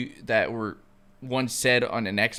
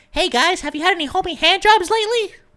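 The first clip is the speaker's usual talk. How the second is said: put-on very high, loud, squeaky kid voice; 8 dB louder than usual. Imitating someone on an Xbox headset, little squeaker voice. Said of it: "with your little squeaker voice".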